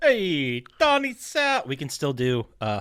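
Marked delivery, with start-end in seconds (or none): 0.0-1.6 fake, very high-pitched, swooping Italian American accent. Greeting the big boss Don Salvatore in the game, in a put-on Italian American accent. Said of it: "racist Italian American accents".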